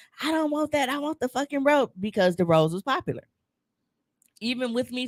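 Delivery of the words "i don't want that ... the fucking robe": mock yelling, high-pitched. Retelling a woman on FaceTime refusing the gift set: imitating someone yelling. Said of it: "she was yelling at him".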